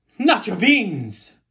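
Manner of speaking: indignant, loud, outraged outburst. Narrator reads a character's reply to another character, outraged cry. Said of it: "cried Skippito out. He was very outraged".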